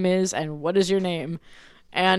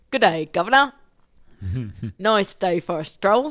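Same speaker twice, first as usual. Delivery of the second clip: bad, sing-song, swooping Cockney accent.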